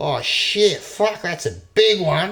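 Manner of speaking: put-on shrill, booming, loud, high-pitched Australian accent. Imitate an actor meant to be american seeing a big winged creature, in his australian accent. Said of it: "keeps speaking with an Australian accent".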